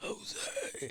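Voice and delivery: hushed, raspy whisper, rough and close. Retelling how someone whispered his name into his ear, imitating a whisper. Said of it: "tries to whisper into your ear".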